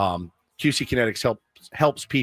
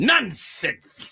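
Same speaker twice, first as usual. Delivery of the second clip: stretched way out, very high pitch; 12 semitones higher than usual. Repeating how a man said a word, mimicking a drawn-out 'nonsense'. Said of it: "Really drags it out".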